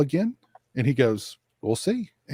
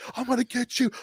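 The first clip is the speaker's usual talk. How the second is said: very high-pitched, loud yell; 11 semitones higher, 5 dB quieter than usual. Retelling a wrestler's threat after a botch: imitating a wrestler yelling. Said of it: "he's yelling at the guy".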